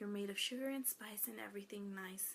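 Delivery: soft, unvoiced whisper.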